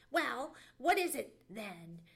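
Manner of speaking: snappish, sharp snap. Sammy Jay presses Johnny Chuck for an answer, snapped. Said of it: "snapped Sammy Jay".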